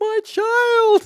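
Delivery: piercing, shrill, very loud scream. Retelling a mother's cry as they ride toward her: imitating someone screaming.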